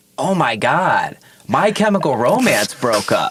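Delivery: sudden high, drawn-out blurted shout. Retelling how someone blurted out mid-set: imitating someone blurting out a shout. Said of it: "he just blurts out".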